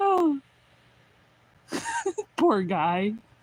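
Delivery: giggling through words. Recalling a character's spiky hair, laughing while talking. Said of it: "I can't stop laughing".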